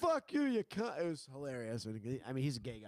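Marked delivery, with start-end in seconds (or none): 0.0-1.0 very high, shrill, loud, full-throated screaming outburst. Retelling how a man at an open mic reacted: imitating someone screaming. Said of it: "He's just screaming".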